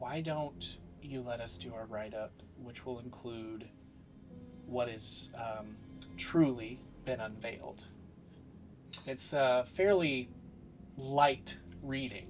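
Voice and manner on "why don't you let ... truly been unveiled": quiet, low voice, quieter. Voicing a character confronting someone privately: speaking quietly to him only. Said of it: "quietly to him only".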